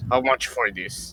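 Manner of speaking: put-on orcish character voice. Asking the price in a shop scene, replying in character: put-on orcish voice. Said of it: "I reply in an orcish voice".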